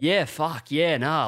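put-on loud voice. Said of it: "as loud as he can".

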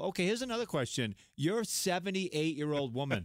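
ordinary delivery

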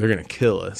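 ordinary talk

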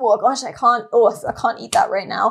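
plain

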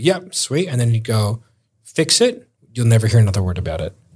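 ordinary talk

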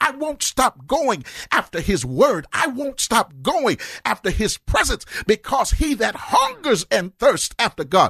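pulpit preaching voice, pitched high. A pastor speaking into the mic to those tuning in, in his preaching voice. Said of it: "put my preaching voice on".

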